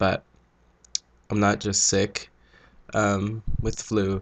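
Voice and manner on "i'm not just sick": ordinary talk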